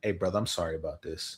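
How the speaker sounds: quiet breathy half-whisper. Imagining giving away the daughter, speaking to the groom: half-whispering in someone's ear. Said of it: "I would just whisper to the young man in his ear".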